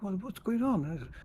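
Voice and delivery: put-on hushed voice. Recounting how one person huddled up to another and spoke; retelling a hushed question. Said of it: "talking to him in like a hushed voice".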